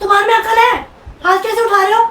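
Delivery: loud, high-pitched angry scolding tone.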